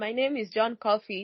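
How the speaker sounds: ordinary talk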